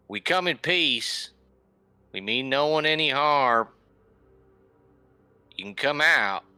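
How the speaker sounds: very loud, high calling out. Calling out to hidden beings no one else notices, very loud call. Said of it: "I very loudly".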